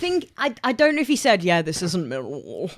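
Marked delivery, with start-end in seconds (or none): 1.4-2.7 London Fulham voice. Quoting what someone said, in a little Fulham voice.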